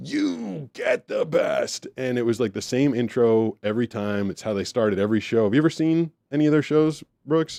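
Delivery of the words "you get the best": growled screaming. Retelling how a man opened every show on stage: imitating a growling scream. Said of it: "that growling scream".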